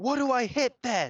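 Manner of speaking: very loud, very high, drawn-out yelling. Asking the game master what to attack, yelling. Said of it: "please don't yell in our ears".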